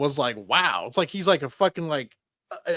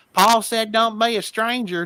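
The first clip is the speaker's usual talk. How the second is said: put-on high, old-timey elderly man's voice; 6 semitones higher, 4 dB louder than usual. Speaker quoting a man working with tools in the sunroom, imitating his voice. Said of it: "He's like".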